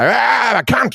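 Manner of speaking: put-on very high, shouted heckling yell. Retelling how Australian hecklers interrupt near a punchline: imitating a heckler yelling. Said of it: "they'll just yell something out".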